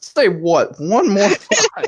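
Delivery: very high, shrill, furious scream with wild pitch swings. As the Illuminati's interrogator, screaming at a prisoner in a Samuel L. Jackson impression. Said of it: "just screaming at you".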